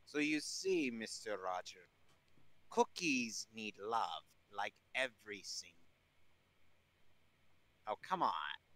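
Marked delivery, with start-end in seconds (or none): 0.1-5.7 put-on villain accent. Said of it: "I heard him start to do the accent".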